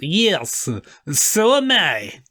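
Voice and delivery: put-on slowly dragged-out Russian accent.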